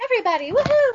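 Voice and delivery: mock cheerful voice, high, bright and chirpy.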